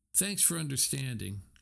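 ordinary delivery

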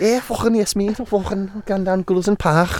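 fake Liverpool accent. Speaker puts on an accent for a friend, put-on scouse accent. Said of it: "you're good at accents".

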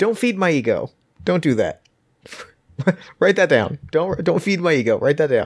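high-pitched sarcasm with laughter.

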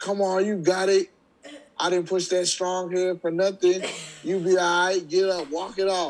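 loud, shrill, very high-pitched hollering. Retelling a woman shouting from the stands after he got hurt: imitating her loud yelling. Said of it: "she's loud".

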